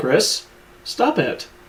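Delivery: play-acted hurt, wounded tone with feelings clearly stung. Retelling a game scene where Chris laughs, imitating Wesker sounding hurt. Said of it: "he just sounds so hurt".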